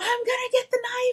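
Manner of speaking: put-on very high, frantic, unhinged, psychotic yell. Retelling yelling at the speaker's dad: imitating own crazed yelling. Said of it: "all psychotic".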